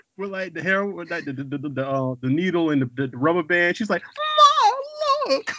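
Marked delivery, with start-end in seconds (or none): 4.0-5.5 mock very high, over-dramatic yelling cry. Retelling a scene where Thelma shows her mother a purse: imitating Thelma's dramatic yelling. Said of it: "It was so dramatic".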